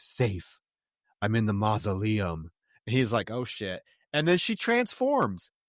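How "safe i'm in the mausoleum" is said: a much deeper, dropped, different voice. Retelling what she answers when he asks where she is, in a deeper voice. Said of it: "now she's talking in a more deep voice".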